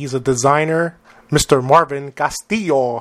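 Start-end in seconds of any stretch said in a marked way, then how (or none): 1.3-3.0 word said with Spanish accent pronunciation. Podcast host introducing his guest by name, in a Spanish accent. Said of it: "I said that with the Spanish accent".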